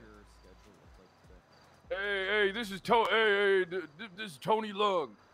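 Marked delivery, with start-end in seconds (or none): 1.9-5.1 higher tough-guy impression, mocking. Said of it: "you got that tough guy voice going on".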